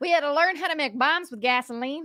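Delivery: West Virginia accent. Telling a family story about moving to America, in a West Virginian hick accent. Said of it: "I don't know why you're West Virginian".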